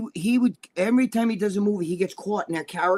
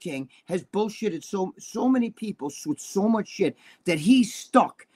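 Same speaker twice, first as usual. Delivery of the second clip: normal talking voice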